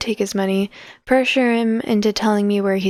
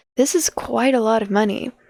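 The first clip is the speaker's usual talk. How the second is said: usual speaking voice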